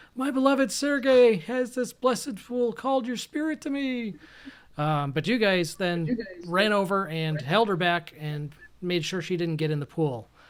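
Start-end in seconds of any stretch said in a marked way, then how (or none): 0.2-4.2 high, desperate crying out. Game master voicing a woman straining to reach the pool, crying out desperately. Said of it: "She's crying out".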